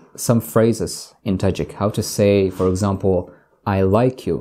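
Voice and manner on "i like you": usual speaking voice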